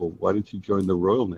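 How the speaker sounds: put-on British accent. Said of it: "the accent came out".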